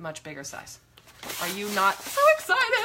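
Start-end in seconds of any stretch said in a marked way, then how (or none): 1.4-2.9 very high, excited, swooping puppet voice. Showing a new journal, asking whether the viewers are excited, in a Muppet voice. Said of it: "I'm doing my Muppet voice".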